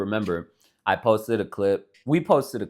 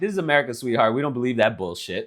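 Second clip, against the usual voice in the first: jokingly ironic, tongue-in-cheek, not meant; 3 semitones higher than usual. Acting out a reply to someone saying everyone has an accent: pretend ironic delivery. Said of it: "I would have done it ironically".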